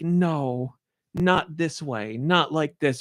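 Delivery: pained, tearful, slow, anguished crying. Speaker describes how a story made them cry, imitating anguished crying. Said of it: "stuff where you're crying where you're like".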